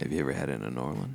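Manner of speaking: creepy heavy-breathing voice. Doing a new character with heavy breathing: creepy heavy-breathing character voice. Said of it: "Stop with the breathing".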